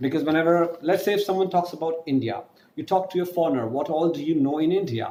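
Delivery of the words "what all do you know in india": ordinary talk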